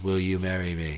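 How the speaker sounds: flat, toneless monotone with no tune. Acting out his marriage proposal in a flat monotone. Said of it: "that's his tone of voice, very monotone".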